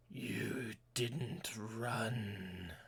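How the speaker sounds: undead creature voice with long, drawn-out sounds. Voicing an undead humanoid strapped to an altar as doors creak open: voicing an undead humanoid. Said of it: "he lifts his head and says".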